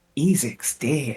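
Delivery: barely voiced, hushed whisper. In a tabletop game, a character answers the player's question, whispered. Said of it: "he whispers to you".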